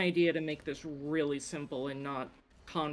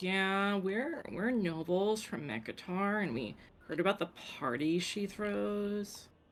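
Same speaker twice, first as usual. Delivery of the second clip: fake Valley girl accent, chattering; 4 semitones higher than usual. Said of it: "you have to talk with a Valley Girl accent?".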